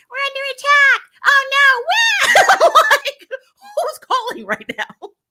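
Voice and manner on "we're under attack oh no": alarmed anime character voice, drawn out. Retelling how a caller on the Ranger line sounded, in an anime character voice. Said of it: "sounding like a whole freaking anime character".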